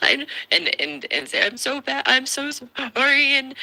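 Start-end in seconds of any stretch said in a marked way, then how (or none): 1.4-3.3 very high, drawn-out, weepy sobbing voice. Imitating a wife who starts crying when criticized: imitating a woman crying. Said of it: "and start crying".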